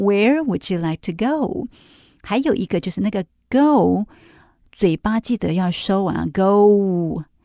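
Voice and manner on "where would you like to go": where lifted above the rest, highest pitch. Teaching English question intonation, highest pitch on where. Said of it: "最重要的字其实我拉得最高Where".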